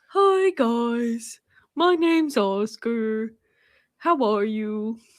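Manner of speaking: cartoon cat character voice, "guys" drawn out. Speaking for someone in a funny voice, doing a Big the Cat voice. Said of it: "Oscar's voice is Big the cat".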